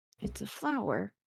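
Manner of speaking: very quiet, mumbled mutter under the breath. Voicing an embarrassed character explaining a nickname: muttering under her breath. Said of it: "she will mutter under her breath".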